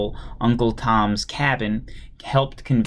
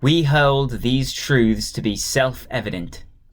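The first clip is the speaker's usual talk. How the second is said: put-on British accent; 3 semitones higher than usual. Reading aloud the opening of the convention's resolution: British accent. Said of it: "I should stop doing the British accent".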